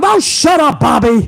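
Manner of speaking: slow, high-pitched, drawn-out yell. Retelling the commentator answering the manager: Vince McMahon yelling. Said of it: "Vince McMahon would be yelling at him".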